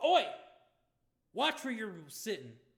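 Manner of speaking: shrill, booming, high, swooping sing-song orc woman voice. Voicing the female half-orc Zamith bumping into Cromwell: Zamith voice. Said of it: "that female half-orc, Zamith".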